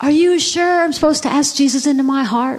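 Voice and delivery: put-on high, loud yell in a small boy's voice.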